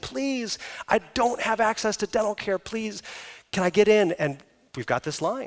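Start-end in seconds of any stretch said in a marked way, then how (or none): 0.0-4.1 put-on tearful begging, crying through tears. Describing the patient wait list, retelling a woman's plea: imitating a woman crying, pleading. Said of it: "coming and crying".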